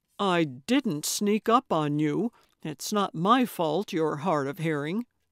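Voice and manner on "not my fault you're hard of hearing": ordinary delivery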